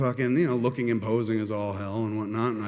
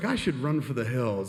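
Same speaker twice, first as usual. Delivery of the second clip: normal talking voice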